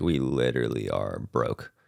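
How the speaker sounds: tearful, holding back tears. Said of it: "I'm trying to cry".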